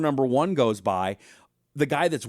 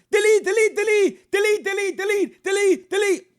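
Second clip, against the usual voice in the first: high yell, repeated over and over; 5 dB louder than usual. Speaker retells guys suddenly yelling at the group taking a picture, retelling men yelling. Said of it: "these guys start yelling".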